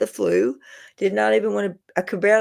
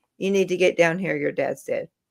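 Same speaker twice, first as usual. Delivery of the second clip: flat, toneless monotone, faster; 3 semitones lower than usual. Retelling what their mom said to them, quoting her flat monotone. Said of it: "her voice in this this monotone".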